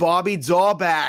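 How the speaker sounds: put-on slow, high-pitched, stretched-out Boston accent. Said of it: "just the most in that accent".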